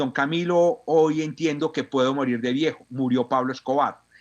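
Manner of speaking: ordinary talk, nothing marked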